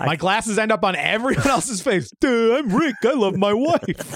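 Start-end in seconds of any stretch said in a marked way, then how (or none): 2.2-4.1 really dopey, dim-witted, goofy put-on voice. Joking about a friend from yearly trips, speaking as him in a dumb voice imitating Rick. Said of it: "in a really dumb voice".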